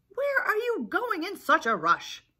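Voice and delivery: very high, loud squawk. Reading Chicken Little aloud, voicing Henny Penny after they collide, squawking. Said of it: "She squawked".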